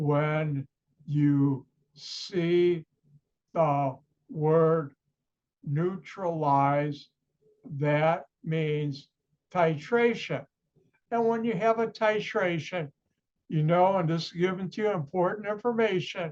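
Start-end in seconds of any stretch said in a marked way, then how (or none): 0.0-10.4 very slow, deliberate, word-by-word delivery. Repeating a chemistry rule a second time, in slow motion. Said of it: "I'll say that in slow motion".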